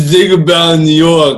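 loud, high, drunken put-on Italian accent. Quoting a line from the movie's opening: drunk John Travolta Italian accent. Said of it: "This is drunk John Travolta doing an Italian accent".

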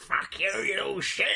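gruff, sudden outburst in cockney. Retelling how Michael Caine's character starts yelling: gruff cockney yell. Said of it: "he just starts yelling, like, gruff cockney".

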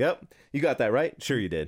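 teasing, condescending, belittling mocking encouragement. Retelling how a comedian mocked a man in a wheelchair: imitating a mocking comedian. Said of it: "just mocking him".

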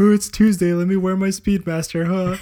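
cheesy put-on voice. Showing how the watch gets announced at home: cheesy put-on voice. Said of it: "With the voice and everything".

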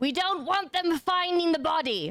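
high-pitched put-on shout. Playing a character urging townsfolk to flee, shouting in character. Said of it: "I shout".

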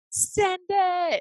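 very high-pitched, all-out scream. Retelling a jump on swinging rings: imitating a scream. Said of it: "I just screamed it".

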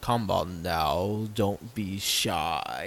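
very low, deep, slow, dragged-out snaky drawl. Retelling a mocap clip of a crawling, hissing performer: most Benedict voice. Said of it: "he's just doing his, like, most Benedict voice".

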